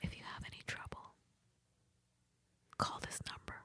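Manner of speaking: hushed, secretive, sly whisper. Telling a story, the speaker quotes a lady who slid over a business card: retelling a whisper. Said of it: "she whispers to me".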